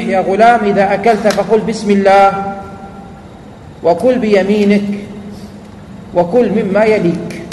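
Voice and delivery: ordinary delivery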